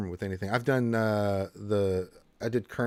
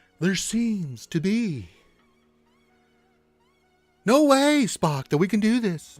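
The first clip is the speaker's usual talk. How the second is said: halting, very high voice with long pauses; 12 semitones higher, 6 dB louder than usual. Speaker demonstrates impressions during a question session: Captain Kirk halting pauses. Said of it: "the Captain Kirk is just a pause".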